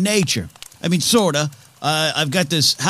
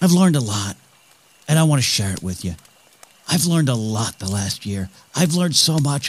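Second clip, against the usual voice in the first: lowered, low, half-whispered, leaning-in voice; 3 semitones lower than usual. Picturing himself talking to his audience by a fire again, in a lowered, half-whispering voice. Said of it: "I'm lowering my voice and sort of whispering".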